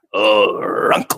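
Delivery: deep, gravelly, sandpaper-rough raspy woman's voice. A speaker redoes another's impression of a woman, deeper and raspier. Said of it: "Gotta get a little deeper and raspier".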